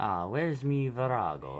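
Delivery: loud, slow, clumsy put-on Italian accent. Joking that item names sound Italian: bad Italian accent. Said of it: "I'm not good with accents".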